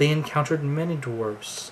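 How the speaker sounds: ordinary delivery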